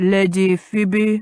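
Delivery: intoned in a deep rich voice. A butler announces a lady at an open door, deep, rich intoning. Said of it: "the butler intoned in a deep, rich voice".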